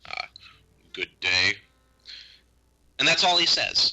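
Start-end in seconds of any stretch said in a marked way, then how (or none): 0.9-1.5 curt, terse woodsman character voice. Voicing a woodsman character who greets the players with a curt nod: curt woodsman voice. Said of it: "He gives you a curt nod".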